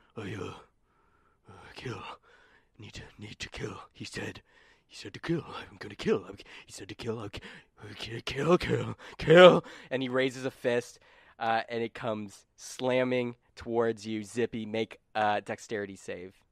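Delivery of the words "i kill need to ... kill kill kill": low gorilla mutter, under breath, half to oneself. A game master voicing an attacker in a Winston from Overwatch impression. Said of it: "my best Winston from Overwatch impression".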